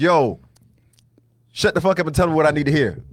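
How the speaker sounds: stern, firm, forceful, no-nonsense tone. Showing how stern talk would sound: stern, forceful tone. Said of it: "That's what I did there".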